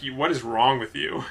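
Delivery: ordinary delivery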